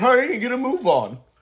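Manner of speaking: very high, petulant, whiny voice. Retelling a line from a character in a show: imitating a petulant whine. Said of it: "he says it in this kind of petulant way".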